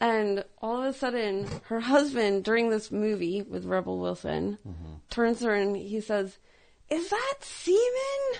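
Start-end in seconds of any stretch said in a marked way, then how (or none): 6.9-8.4 put-on very high, really loud blurt, semen stretched. Telling a story about a couple at a movie, retelling the husband's really loud remark. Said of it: "Really loud".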